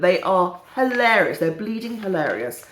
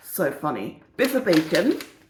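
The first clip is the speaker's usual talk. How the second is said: normal talking voice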